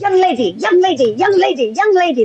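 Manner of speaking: mock insistent, high hollering, repeated. Retelling how a gentleman called out from across the room: imitating a man yelling. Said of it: "always yelling at me".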